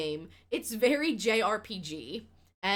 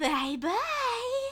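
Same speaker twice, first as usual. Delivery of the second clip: put-on unsettling, breathy, very high little-girl voice. Describing a farm visitor's sound bite as you leave, in a creepy breathy little-girl voice. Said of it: "most breathy, unsettling little girl bye-bye voice".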